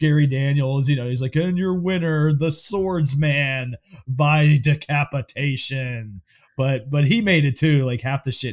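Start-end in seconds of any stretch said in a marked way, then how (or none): 1.3-6.2 slow, drawn-out strip-club announcer voice. Quoting what he says after a decapitation, in a strip club announcer voice. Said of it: "sounded like a strip club announcer".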